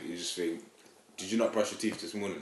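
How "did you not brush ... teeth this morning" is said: ordinary talk, nothing marked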